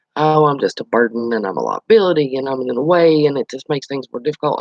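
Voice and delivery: ordinary talk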